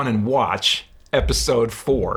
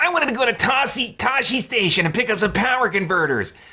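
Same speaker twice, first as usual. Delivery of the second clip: very high, whiny voice pitched way up; 10 semitones higher than usual. Quoting a whiny film line, imitating Luke Skywalker. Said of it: "That's a Luke line".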